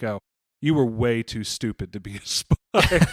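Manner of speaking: slow, put-on, straight-faced, matter-of-fact male voice. Retelling a man's answer about why he never thought you a spy, in a deadpan Shalazar tone of voice. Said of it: "with a straight face".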